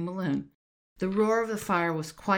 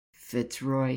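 low grumble under the breath, much lower pitch; 4 semitones lower than usual. William, beside Eliza, mutters a name to himself; grumbled under his breath. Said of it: "he grumbled under his breath".

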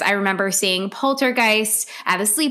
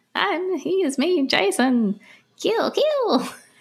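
very high put-on voice, every word dragged very slowly; 9 semitones higher than usual. Answering a question about how Mrs. Voorhees sounds: Mrs. Voorhees voice. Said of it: "what does Missus Voorhees sound like?".

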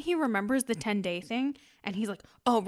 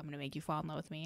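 muttering, lower and quieter; 5 semitones lower, 12 dB quieter than usual. Retelling a movie scene, imitating a character muttering under his breath. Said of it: "And under his breath".

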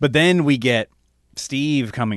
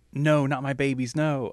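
mock, desperate, imploring begging cry; 3 semitones higher, 4 dB quieter than usual. Discussing a film scene where she is begging: imitating a character begging. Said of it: "she's begged like".

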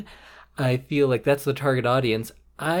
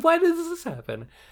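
mock angry ranting, growing, higher. Retelling writing notes on a movie: retelling own growing anger. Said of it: "progressively more angry".

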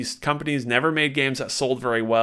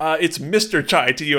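blunt, straight, matter-of-fact delivery; 4 semitones higher, 3 dB louder than usual. Retelling a game scene, the main character's reply: imitating Chai. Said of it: "And Chai says".

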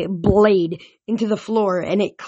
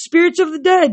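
high crying out; 8 semitones higher, 4 dB louder than usual. A ghost calls the spirits of the dead to him mid-fight, crying out. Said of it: "Minos cried".

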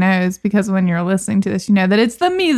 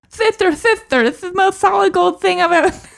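put-on very high-pitched small boy voice; 11 semitones higher than usual. Listing a film's cast, quoting the little boy's line in a Winthrop impression. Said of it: "That's a pretty good impression".

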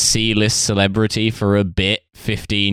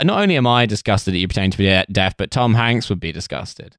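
ordinary talk

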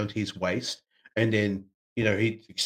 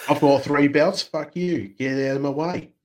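put-on loud, high Australian accent on every word; 5 semitones higher, 5 dB louder than usual. Answering a suggestion to say the boast again: Aussie accent as Roman Reigns. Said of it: "Aussie accent".

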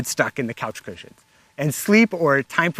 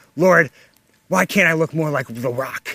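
put-on mumbling under the breath. Imitating a partner huffing up a mountain: Brian Wilkerson mumbling under his breath. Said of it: "mumbling under his breath".

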